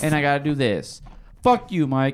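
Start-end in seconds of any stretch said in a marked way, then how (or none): 1.4-2.1 slightly hostile, a little aggressive, higher pitch. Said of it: "that was a little aggressive".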